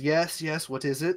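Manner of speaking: groggy, sleepy, just-woken voice. Voicing an alderman just woken at the door: groggy alderman voice. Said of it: "a groggy-eyed ol-, uh, alderman kinda comes to the door and he goes".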